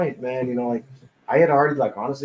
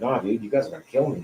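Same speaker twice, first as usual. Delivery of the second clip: put-on scared, fearful voice; 3 semitones lower, 3 dB quieter than usual. Retelling what a frightened friend kept saying: imitating someone afraid. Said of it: "so afraid".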